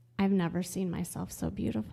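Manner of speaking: put-on murmur under breath. Retelling what a woman in tears said at the mirror: imitating saying it under her breath. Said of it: "she says under her breath".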